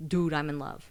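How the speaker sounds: ordinary delivery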